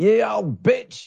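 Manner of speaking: high, slow, drawn-out yell. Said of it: "there were people yelling out".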